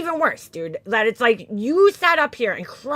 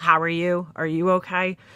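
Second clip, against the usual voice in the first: stiff, flat, mechanical robot voice monotone; 6 semitones lower than usual. Mocking a woman's awkward greeting: imitating Laura sounding robotic. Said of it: "Sounds like a fucking robot".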